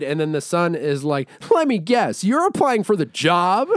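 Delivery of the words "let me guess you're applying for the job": put-on pitched-up cartoon boy character voice. Retelling a bad movie scene, imitating the son character. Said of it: "I like your delivery ten times better".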